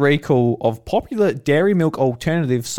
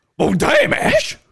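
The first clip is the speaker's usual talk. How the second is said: cartoon dog voice, much higher. Reacting to a jab about not being funny, sounding like Scooby-Doo. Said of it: "That sounded like Scooby-Doo".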